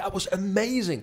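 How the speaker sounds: put-on very high, starstruck, flipping out. Retelling a teacher's astonishing kick: retelling own excited outburst. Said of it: "I'm totally flipping out".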